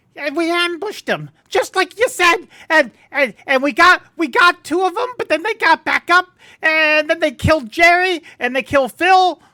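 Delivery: very shrill, very high, loud goblin voice. Game master voicing a goblin explaining an ambush, in a goblin voice. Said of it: "You hear a goblin voice explaining".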